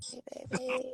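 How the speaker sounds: groggy morning voice.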